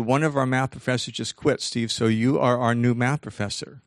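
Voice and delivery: ordinary talk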